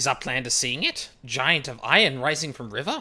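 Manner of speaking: put-on booming goblin voice, very loud. Speaker reads game quest dialogue aloud, doing a goblin voice. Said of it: "having to do a lot of goblin voices".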